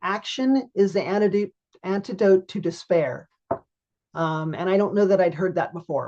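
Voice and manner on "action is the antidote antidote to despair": plain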